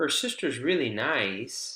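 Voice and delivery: pitch on nice drops only partway down.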